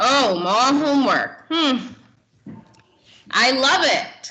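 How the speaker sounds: heavy, slow, exaggerated ironic sarcastic drawl. Showing a class the irony in a student's voice: exaggerated sarcastic tone. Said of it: "You can almost hear the irony in their voice".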